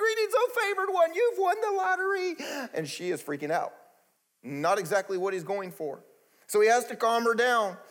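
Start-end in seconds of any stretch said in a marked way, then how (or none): 0.0-2.7 very high, really excited, mock herald announcer cry. Retelling the angel's announcement to Mary: imitating Gabriel really excited. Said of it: "really excited".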